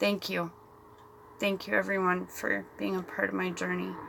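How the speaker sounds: soft voice, words fighting through held-back tears. Thanking viewers at the end of a video, holding back tears. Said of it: "I'm trying not to cry".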